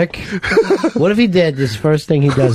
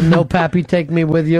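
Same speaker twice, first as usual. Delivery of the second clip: usual speaking voice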